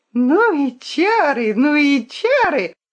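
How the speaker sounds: put-on joyful, high, gleeful child's squealing. Narrator reading a story, a young boy hopping on one foot, joyfully squealing. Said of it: "радостно верещал цыганенок".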